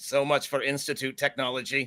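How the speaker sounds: flat, mechanical robotic voice. Narrating a synth whose gun explodes in its hand, robotic voice. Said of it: "in a like a robotic voice".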